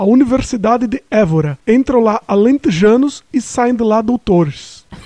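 stronger fake Portuguese accent. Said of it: "Tenta mais forte agora".

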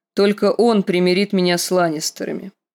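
plain

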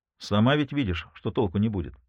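ordinary delivery

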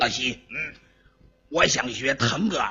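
put-on low, raspy child's voice. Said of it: "现在我是这孩子".

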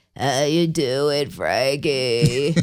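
put-on hoarse smoker voice, very low. Imitating how heavy-smoking people talk, very hoarse, very low voice. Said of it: "with the very hoarse, very low voice".

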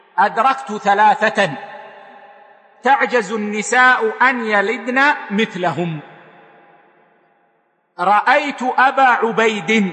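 ordinary talk

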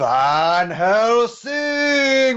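very high shouted call, word drawn out long. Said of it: "while shouting down a hallway".

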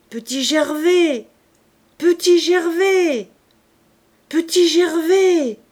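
far-carrying, very loud, high calling out. A man at a crossroads calls a name one last time, calling out. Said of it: "Son cri s'éteignit".

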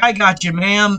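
ordinary talk

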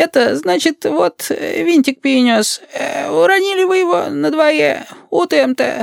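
small put-on old-man voice. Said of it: "выговорил картавым старческо-лилипутским голоском".

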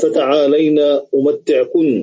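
normal talking voice

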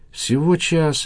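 high, glad, joyful, happy cry. Goncharova responds after Janusidze says rescuers will come within the hour, joyful exclamation. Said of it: "радостно воскликнул Гончарова".

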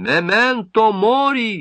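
high orator's cry, last word stretched. Peskov leans over the podium to speak, exclaiming. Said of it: "навалился грудью на трибуну и воскликнул".

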